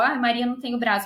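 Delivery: normal talking voice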